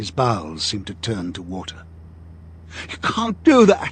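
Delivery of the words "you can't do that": cracking outcry, pitched very high. Realizing what the caged mask is for, a man cries out to O'Brien; high, cracked cry. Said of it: "he cried out in a high, cracked voice".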